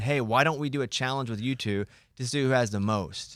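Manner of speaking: normal talking voice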